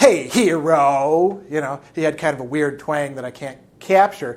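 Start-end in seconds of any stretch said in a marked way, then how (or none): 0.0-1.4 mock, contemptuous, sneering drill sergeant voice. Retelling how a sergeant addressed recruits, mimicking Sergeant Huff's contempt. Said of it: "the contempt was just dripping through that".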